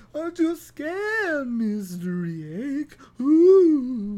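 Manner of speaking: very slow, loud, high, spooky cartoon ghost voice. Teasing Mr. Egg: Scooby-Doo ghost voice. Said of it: "Sound like a ghost from like Scooby-Doo".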